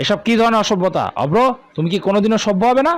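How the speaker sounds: sharp scolding tone. Reading a story, father reacting after food is thrown: scolding. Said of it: "বাবার ধমক শুনে".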